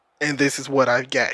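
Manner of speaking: put-on deadpan delivery. Retelling a line said with the straightest face: imitating David Yost's straight face. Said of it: "He said with the straightest face".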